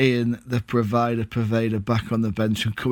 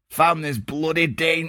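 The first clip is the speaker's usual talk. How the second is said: Yorkshire accent, put on for show, pitched up; 5 semitones higher than usual. Trying out accents on a line of football news: yorkshire accent. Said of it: "that's Yorkshire".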